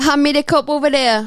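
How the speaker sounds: put-on Jamaican accent, very loud and high. Showing an accent on request: jamaican accent. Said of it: "You got Jamaican?".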